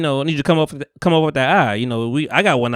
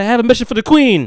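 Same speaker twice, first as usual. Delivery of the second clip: loud, pitched-up, overly proper, chest-out delivery; 9 semitones higher, 5 dB louder than usual. Retelling a young rider's formal line to the guards: imitating overly proper talk. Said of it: "try to talk so proper and so, like, with their chest".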